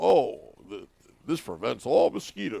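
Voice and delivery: low-toned voice. Imitating a friend's bug spray commercial line: Bill Clement low-tone voice. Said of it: "and Bill's, like, low-tone voice".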